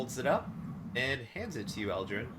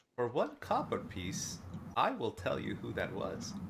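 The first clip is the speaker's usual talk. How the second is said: hushed, secretive, confidential stage whisper. Voicing a character who looks around and half-whispers to a player: half-whispering NPC. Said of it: "he looks around and he's gonna whisper to you".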